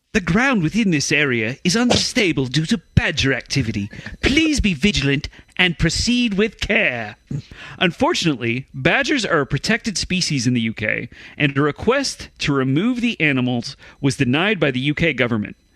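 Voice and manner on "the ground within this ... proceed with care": put-on posh English accent, monocle-style. Rereading a warning sign after the others ask for the right accent: put-on English accent. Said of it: "get my cousin from England on the phone".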